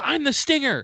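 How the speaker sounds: mock very high-pitched, heated shout. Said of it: "Sting just completely interrupts him and yells".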